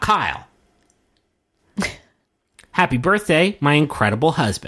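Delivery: way over-intense, throat-straining, oddly intense voice. Reading out a wife's Jumbotron birthday message to her husband, intense voice. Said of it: "I don't know why I'm doing such an intense voice".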